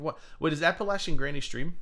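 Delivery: normal talking voice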